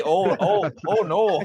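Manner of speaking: very high, drawn-out, slow put-on Midwestern accent. Imagining how whiskey-drinking squirrels would talk, in a Midwestern accent. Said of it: "they sound like they're from the Midwest".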